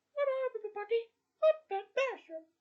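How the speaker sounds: very high, squeaky cartoon mouse voice, loud. Showing how the character's voice first sounded: Ben Bearson Mickey Mouse-like voice. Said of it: "a bit like Mickey Mouse".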